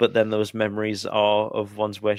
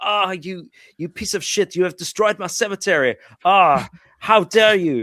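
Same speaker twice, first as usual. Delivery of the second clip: mock heated, worked-up ranting outburst; 9 semitones higher, 5 dB louder than usual. Retelling a film scene where the character rants in the car: imitating an actor's ranting. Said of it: "he's having this rant in the car".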